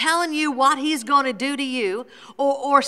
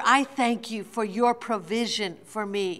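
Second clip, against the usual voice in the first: ordinary talk, nothing marked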